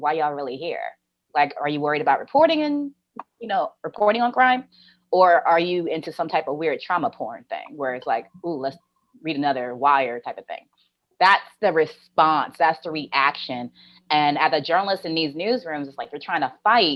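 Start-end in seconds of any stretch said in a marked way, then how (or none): none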